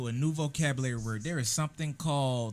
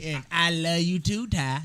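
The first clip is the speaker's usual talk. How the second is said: imitated old woman voice; 4 semitones higher, 6 dB louder than usual. Retelling how grandma answers back, imitating grandma. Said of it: "That's how she talk back".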